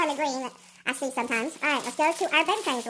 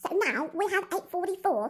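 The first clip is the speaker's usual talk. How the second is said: slow, squeaky chipmunk voice with British accent; 3 semitones higher than usual. Experimenting with voices, the speaker reads out numbers in a British accent in chipmunk voice. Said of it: "if I did my British accent in chipmunk".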